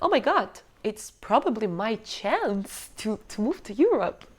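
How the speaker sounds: normal talking voice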